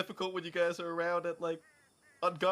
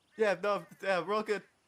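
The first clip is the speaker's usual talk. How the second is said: words broken up by laughter throughout; 3 semitones higher than usual. Answering others who ask whether they find it funny: laughing while talking. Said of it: "Do you find it funny?".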